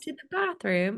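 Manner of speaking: put-on London-style British accent. Guessing how a friend will sound after moving to London, put-on British accent. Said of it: "what kind of like tones you'll come back with".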